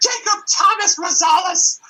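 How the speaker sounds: very high, shrill, full-volume furious yell. Retelling mom finding the clogged toilet: imitating mom yelling. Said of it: "my mother would always yell at me using my full name".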